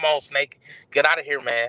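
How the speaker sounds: ordinary talk, nothing marked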